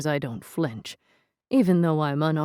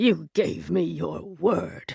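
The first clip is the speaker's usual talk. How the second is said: hoarse, rough, scraping rasp. In a story, a voice speaks from behind the narrator, raspy voice. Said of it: "A voice rasps behind us".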